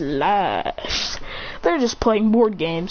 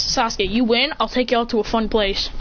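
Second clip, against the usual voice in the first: ordinary talk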